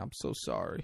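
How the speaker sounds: very quiet, soft whisper. Retelling a scene where he wakes her and sits beside her, retelling a soft apology. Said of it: "he apologizes softly".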